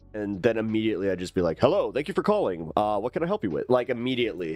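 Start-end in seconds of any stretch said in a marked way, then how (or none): 1.6-3.7 switched-on, professional customer-service phone voice. Retelling answering a phone call among friends: imitating own professional phone voice. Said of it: "Man, you could turn that on".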